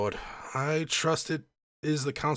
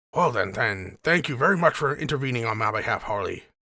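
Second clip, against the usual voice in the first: put-on elderly man voice, louder; 4 dB louder than usual. Voicing an old man thanking harley for stepping in: old man voice. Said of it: "Doing that voice for the old man".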